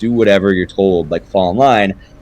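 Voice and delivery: ordinary talk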